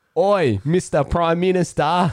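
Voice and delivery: very high, loud, bad fake Australian accent. Retelling a scene from The Simpsons: imitating a bad Australian accent. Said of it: "their Australian accents were pretty bad".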